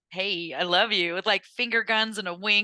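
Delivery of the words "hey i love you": super-sarcastic put-on tone, lower and slower. Speaker retells what they'd say passing the mirror: retelling a super-sarcastic greeting. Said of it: "like super sarcastic".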